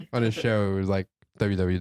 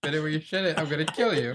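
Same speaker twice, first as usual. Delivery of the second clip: high-pitched, hollering yell; 8 semitones higher than usual. Retelling how another speaker yelled at the dog: imitating someone yelling at a dog. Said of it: "I hear you yelling at the dog".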